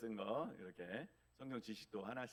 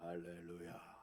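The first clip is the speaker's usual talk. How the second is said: low, hushed, hoarse husky tone; 5 semitones lower, 6 dB quieter than usual. Mimicking how such people greet you with hallelujah, low husky voice. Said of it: "할렐루야 이렇게 하세요. 저음의 톤이에요. 그 허스키".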